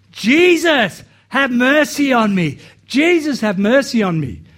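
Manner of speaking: acted loud yell, high-pitched and drawn out. Telling a story, the speaker acts out a guy as Jesus passes, retelling a yell. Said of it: "this guy starts yelling".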